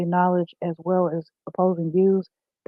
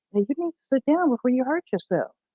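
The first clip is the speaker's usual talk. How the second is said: slightly raised, higher-pitched mock voice; 6 semitones higher than usual. Retelling telling a restless child to sit down: imitating own raised voice. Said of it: "I had to raise my voice a little bit".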